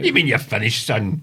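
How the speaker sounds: imitated Glaswegian accent. Joking about how Glasgow people talk: imitating a Glaswegian. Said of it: "a lot of Glasgow have been saying".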